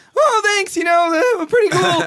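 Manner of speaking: high, loud, slow cartoon voice. Wearing a Rick and Morty shirt, the speaker answers people's compliments in the Morty voice. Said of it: "And then I'll do the Morty voice like".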